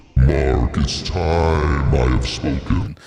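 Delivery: very deep, very slow, drawn-out delivery. Acting out God calling the speaker by name: God voice. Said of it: "Where's my God voice?".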